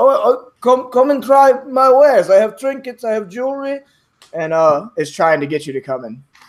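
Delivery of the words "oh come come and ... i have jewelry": put-on thick Russian accent, pitched very high. A market vendor shouts over to a passer-by, hoping for a quick sale: thick Russian accent. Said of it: "a thick Russian accent".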